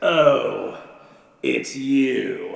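contemptuous, dismissive, sneering, drawn-out "oh". Acting out a party host greeting an invited guest: imitating a sneering host. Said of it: "turns with a sneer".

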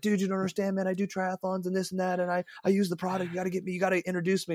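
rushed, panicky gushing. Retelling calling someone to ask for an introduction, imitating own frantic excitement. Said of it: "I call Tom Kutcher freaking out".

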